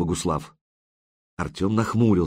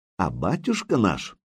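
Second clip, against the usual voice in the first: usual speaking voice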